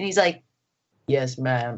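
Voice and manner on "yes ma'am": mock unruffled, polite, very calm, even delivery. Retelling how an actor answered directions on set: calm imitation of David. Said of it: "so calm".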